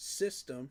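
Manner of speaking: "system" hit hard and weighted. Insisting these plays work for this system, heavy stress on system. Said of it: "I'm stressing that word".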